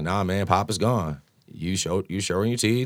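calm, even, matter-of-fact, with no heat. Recounting what they told him, retelling it calmly, not yelling. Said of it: "wasn't yelling at him. I was just saying it like that".

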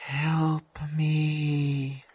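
soft, faint, barely audible whisper. Storyteller voices a call for help coming from the fog: faint whisper. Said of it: "you hear a faint whisper from the direction".

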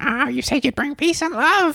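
high cartoon mom voice.

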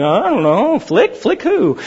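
slow, sing-song, deadpan tone of feigned ignorance. Retelling a movie scene, voice the classmates answering the teacher, retelling a deadpan reply. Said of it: "just deadpan".

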